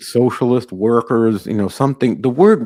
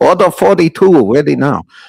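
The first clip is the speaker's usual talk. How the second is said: put-on Chinese accent, high and loud, announcer-style; 5 semitones higher, 6 dB louder than usual. Calling out orders over the kitchen microphone, the speaker uses a chinese accent. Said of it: "you speak in Chinese accent on microphone".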